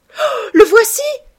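sudden shrill outcry, very high and very loud. Narrator reads her spotting Dorian Gray passing by, crying out.

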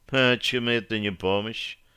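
indifferent, unconcerned, smirking tone. A woman answers a man who hissed that he'd asked for help: indifferent smirk. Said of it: "равнодушно усмехнулась Берия".

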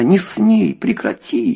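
desperate, very high-pitched shrieking scream. A woman screams at a man grabbing at her clothes. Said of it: "закричала она".

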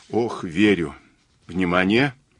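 ordinary delivery

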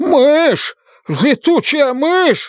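shrill, very high howl of panic. Narrator voicing a character reacting to a bat, howling. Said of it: "взвыл он".

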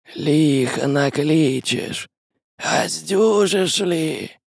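sibilant hissing shadowy voice. Reading a story, voicing a shadow as it answers the man, hissing. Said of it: "Прошипела тень".

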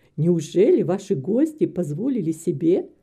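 ordinary delivery

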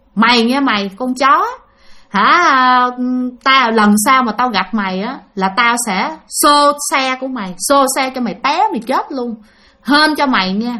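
normal talking voice

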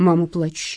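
ordinary talk

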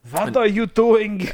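put-on bad high old-man German accent.

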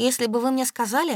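plain reading voice

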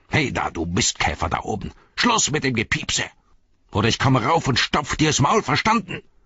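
yapping, barking orc monster voice. Narrator reading a scene where an orc shouts up to someone above, in a barking orc voice. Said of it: "eine Orkstimme belferte".

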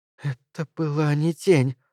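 trembling, shaky, quavering voice. Mary replies to Bart in a trembling voice. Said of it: "дрожащим голосом промолвила Мэри".

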